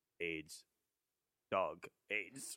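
grave, dead-serious deadpan, delivered word by word. Retelling the dog walker's exact three-word answer: imitating a dead-serious reply in his cadence. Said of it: "he goes like this".

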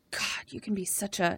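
mock mutter under breath. Retelling what a man muttered to a woman, under his breath. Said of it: "under his breath".

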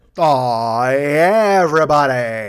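bad, cheesy radio DJ announcer voice. After playing something, the speaker greets everybody in a bad radio guy voice. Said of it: "That's a bad radio guy".

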